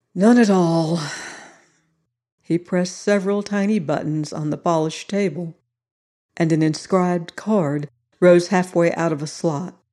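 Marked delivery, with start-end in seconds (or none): 0.1-1.0 sighing, slower. The central figure answers a question about getting a DP, with a sigh. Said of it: "The central figure sighed".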